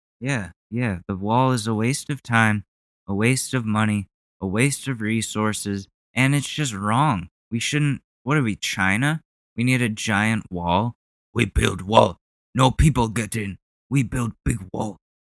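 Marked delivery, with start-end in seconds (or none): 11.3-15.0 put-on caveman voice, primitive-sounding talk. Mocking the idea of building a wall, speaking in a caveman voice. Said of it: "that was my Cro-Magnon".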